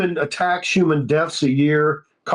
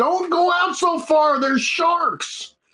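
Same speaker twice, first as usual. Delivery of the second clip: yelling with the voice way up high; 13 semitones higher than usual. Father on the beach retells calling to his wife and older kids in the water: retelling his own yell. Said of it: "and I yelled".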